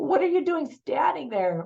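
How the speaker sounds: high-pitched, exasperated tone of disbelief. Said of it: "I was just like".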